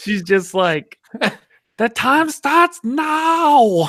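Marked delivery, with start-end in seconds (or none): 1.8-3.9 put-on very high, stretched French-Australian accent. Describing a woman who is fun to listen to, French Australian accent. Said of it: "she has like a French Australian accent".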